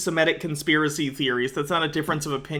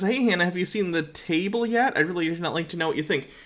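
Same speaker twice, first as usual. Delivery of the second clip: usual speaking voice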